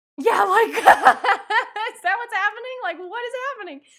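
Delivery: high, loud, laughing, incredulous tone.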